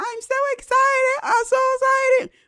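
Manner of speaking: put-on very high, slow twelve-year-old girl voice. Mocking a grown man cosplaying a twelve-year-old girl: mocking a twelve-year-old girl voice. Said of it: "cosplaying a twelve-year-old girl talking about".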